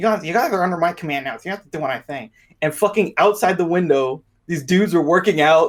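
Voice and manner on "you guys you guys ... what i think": rushed, geeky, nerdy voice. Retelling a guy who ordered the group around: imitating a nerdy guy. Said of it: "he's like a nerd".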